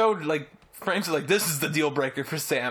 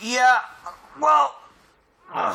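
loud, pitched-up words pushed through a yawn; 8 semitones higher, 6 dB louder than usual. Starting a reply about film callbacks, yawning while talking. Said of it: "sorry, I'm yawning".

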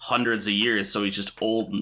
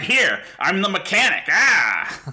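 mock hammy over-the-top reading, higher and louder; 10 semitones higher, 6 dB louder than usual. Retelling a movie where everyone is subtle but one actor isn't: imitating an unsubtle, over-the-top actor. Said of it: "everybody talks like this, and he's like".

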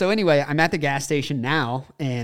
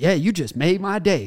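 put-on excitement, higher; 3 semitones higher than usual. Retelling a guy's reply on hearing class was off, imitating him all excited. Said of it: "he was like all excited".

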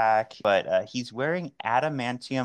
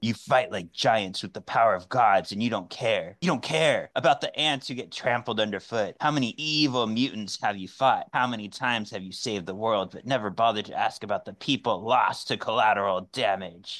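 venomous, hateful, angry voice. Asked to give more of his monologue, the speaker performs it in a hate voice. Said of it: "you just like my hate voice".

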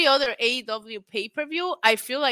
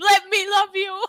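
put-on big, high, screamed outburst; 9 semitones higher, 4 dB louder than usual. Telling others what he will do otherwise, act it out, imitating someone screaming. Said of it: "he will scream".

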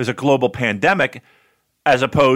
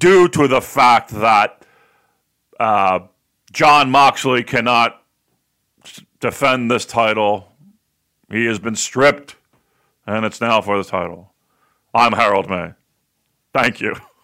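slow put-on voice, each word drawn out; 2 semitones lower than usual. Playing Harold announcing that a title has been stripped, in an Arnold Schwarzenegger voice. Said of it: "he sounds like Arnold Schwarzenegger".

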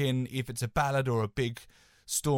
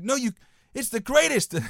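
shout, higher and louder; 11 semitones higher, 6 dB louder than usual. Retelling a friend storming in and praising a single: imitating a friend shouting. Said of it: "Shouting around to Bobo".

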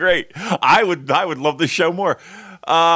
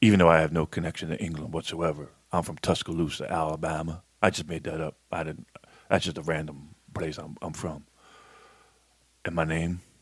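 mocking wheezy impression, lower and quieter; 11 semitones lower, 10 dB quieter than usual. Doing an imitation of an angry podcast listener on a ventilator: imitating a wheezing listener. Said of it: "can I do an imitation of that person?".

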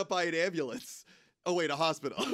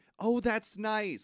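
high, strained, forced polite pleasantness; 6 semitones higher than usual. Acting out a woman at work answering a man's crush: imitating forced pleasantness. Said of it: "she's just trying to be, like, pleasant".

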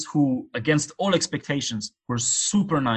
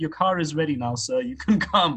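kind, courteous, polite, friendly soldier character voice; 3 semitones higher than usual. Retelling what a kind soldier said at the border, imitating a polite, smiley soldier. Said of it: "really nice and kind and really polite and smiley".

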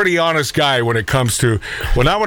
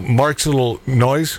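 plain

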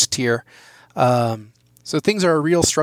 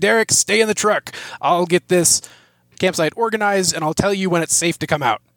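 mild yelling voice; 3 semitones higher than usual. In a role-play scene, a player's character yells to Derek: yelling. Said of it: "So I'm yelling at you".

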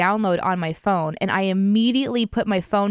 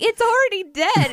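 mock shrill, high-pitched yelling; 12 semitones higher than usual. Retelling yelling at someone on the phone about a chopped snake, retelling a yell. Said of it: "And I'm yelling at him like".

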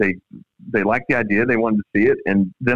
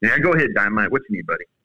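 ordinary talk

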